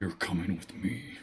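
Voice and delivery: bestial, guttural voice pushed from the throat. Narrating a tabletop game, the game master voices what the players hear: Batman-y guttural voice. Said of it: "with a bestial gutturally voice say".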